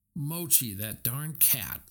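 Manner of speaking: plain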